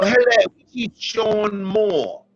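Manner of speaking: very high-pitched, put-on English accent. Retelling calling in with a put-on english accent. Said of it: "I called with an English accent".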